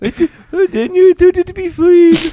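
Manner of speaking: put-on Polish accent, very high. Asked what that accent was, repeat it as a Krista impression in a Polish-sounding accent. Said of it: "She's not a Polish immigrant".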